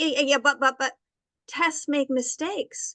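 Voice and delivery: put-on stuttering, stammering voice. Retelling what a doctor said when checking the file: imitating a doctor stuttering. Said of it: "he started stuttering and goes".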